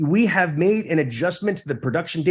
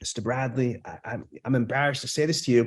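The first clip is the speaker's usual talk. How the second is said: lowered, soft voice brought right down; 5 semitones lower, 5 dB quieter than usual. Demonstrating how voice conveys sincerity in an apology: lowered voice. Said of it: "I have my voice lowered down".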